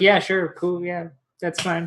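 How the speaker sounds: nonchalant, indifferent. Playing a character answering a price offer with a shrug: shrugging, nonchalant. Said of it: "just a very, like, shrug".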